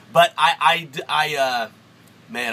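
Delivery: stuttering. Reviewing a dripper, stuttering. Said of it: "I'm sorry, I'm stuttering".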